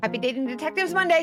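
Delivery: rushed, very fast, high-pitched, rattled-off delivery. A host rattles off the show's greeting after reading a hotline disclaimer, very fast. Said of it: "I said that so fast".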